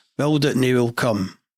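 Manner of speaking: ordinary delivery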